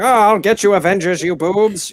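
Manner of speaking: played as cartoon villain. Describing sixties Loki as a flat villain, the speaker does a Skeletor voice. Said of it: "he has Skeletor's voice".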